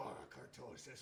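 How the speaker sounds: eerie put-on voice, hushed and whispered. Suggesting how a show's character could have said it earlier, creepy voice. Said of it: "in his creepy voice go".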